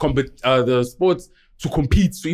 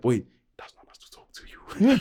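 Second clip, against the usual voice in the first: secretive, high, hushed whisper under the breath; 5 semitones higher, 4 dB quieter than usual. Retelling what a schoolmate said when asked what's going on: imitating someone whispering. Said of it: "And he's whispering too".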